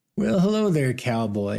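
teasing, derisive, mocking tone. Narrator reads Farber answering a stranger's greeting, in a mocking tone. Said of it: "in his classic mocking tone".

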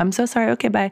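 high, jittery, nervous, apologetic mock delivery. Recalling how they talked at twenty-one: imitating a nervous apology. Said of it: "a nervous laugh and a".

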